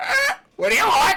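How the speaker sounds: shrill, very loud, very high parrot squawk. Narrating the scene, the storyteller voices a parrot greeting the listeners: squawking parrot voice. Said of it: "you hear the parrot squawk out".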